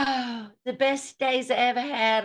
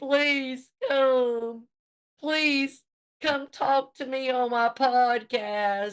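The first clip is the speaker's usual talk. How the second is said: slow, drawn-out, pleading begging voice; 2 semitones higher than usual. Retelling how a podcaster begged someone to come on: mock pleading. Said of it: "He was begging".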